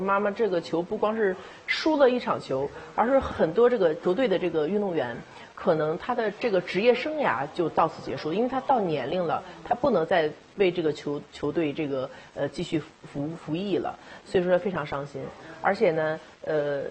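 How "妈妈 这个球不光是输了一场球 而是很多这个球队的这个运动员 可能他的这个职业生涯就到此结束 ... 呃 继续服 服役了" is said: usual speaking voice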